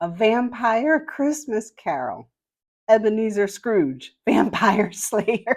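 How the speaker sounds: laughing while talking. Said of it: "I failed".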